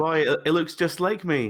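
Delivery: insincere gushing delight, high and loud. Imitating someone praising a kid's drawing: fake delight over a kid's drawing. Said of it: "Like a kid's drawing".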